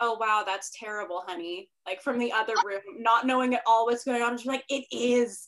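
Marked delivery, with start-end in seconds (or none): 0.0-1.7 put-on joking tone, lower. Speaker retells how her husband jokingly answers from the other room. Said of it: "jokingly respond like".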